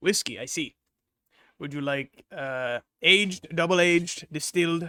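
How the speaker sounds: slow, deliberate goblin character voice. Voicing a strange goblin at the bar greeting a player: goblin voice. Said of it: "what almost appears to be a goblin".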